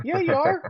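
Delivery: teasing, playful, very high-pitched, jabbing tone. Acting out a reply to a customer not buying today: playful, not arrogant. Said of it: "I say it in a playful way".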